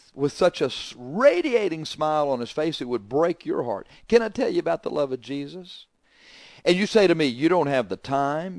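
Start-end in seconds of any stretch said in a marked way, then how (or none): 4.1-5.9 mock-feeble, weak voice, higher. A speaker retells what a man says with a smile, imitating a feeble voice. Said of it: "smile with his feeble voice".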